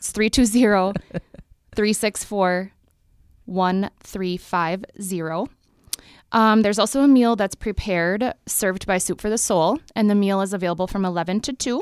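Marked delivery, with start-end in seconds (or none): 0.0-5.5 deliberately slow, unhurried pace. Giving listeners a phone number, saying it slow. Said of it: "I'll say it kind of slow".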